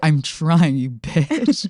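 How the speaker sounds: mouthy, bratty talk-back tone. Retelling what Jake said while leaving: imitating bratty Jake. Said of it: "He's so bratty".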